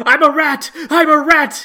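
frantic yell, very high, loud, slow and drawn-out. Recounting what their orc character yelled in the game, retelling a yell. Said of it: "Is what I'm yelling".

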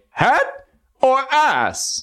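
very high, showy game show announcer voice. Describing reacting to a street sign while alone in the car, game show announcer voice. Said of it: "will become the game show host announcer and say".

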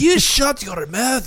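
mock shrill, very high screaming, bad Scottish accent. Retelling a man telling her to shut up, screaming in a terrible Scottish accent. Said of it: "he's just screaming in the Scottish accent".

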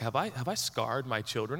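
ordinary talk

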